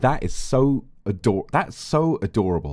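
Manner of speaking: plain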